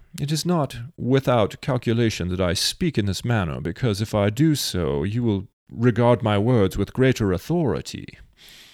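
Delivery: put-on English-accented speech. Speaker announces they will say this with a british accent: british accent. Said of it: "Let me say this with a British accent".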